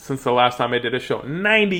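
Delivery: plain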